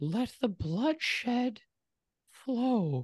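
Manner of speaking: very high, slow, trembling voice with stretched flow. Narrating a man on a raised platform addressing a crowd, in a high-pitched quavering voice. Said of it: "says in a high pitched, quavering voice".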